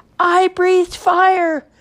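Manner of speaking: shrill, very high yell at full volume. The littlest dragon has just shot fireballs from his nostrils, yelling. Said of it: "yelled the littlest dragon".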